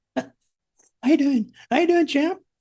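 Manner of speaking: really high-pitched, squeaky male voice. Imitating a brutal-looking guy whose voice doesn't match him, in a really high-pitched voice. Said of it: "he's got a really high pitched voice".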